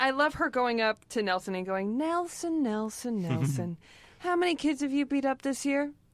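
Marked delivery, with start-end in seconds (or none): 2.0-5.9 high, dreamy, wistful put-on voice. Quoting a character saying goodbye to a student: imitating Edna, wistful. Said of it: "How wistful she is".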